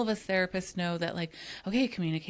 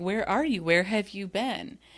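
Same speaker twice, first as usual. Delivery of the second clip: mock annoyed, angry, accusing and insistent tone; 4 dB louder than usual. Retelling the skit role of Donna, who confronts a late Chuck: imitating pissed Donna. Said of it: "Donna is pissed".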